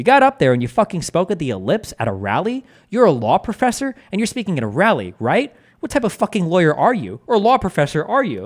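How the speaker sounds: put-on harsh, high-pitched, berating tone. Speaker retells what he said to a law professor on a call, retelling a harsh tone. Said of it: "in a rather harsh, harsh tone".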